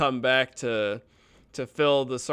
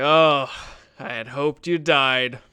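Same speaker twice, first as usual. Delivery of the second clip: soured, displeased, raised voice; 5 dB louder than usual. Voicing the bulldog-looking gate guard greeting the party: sour gate guard. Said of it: "his face sours again as you walk up".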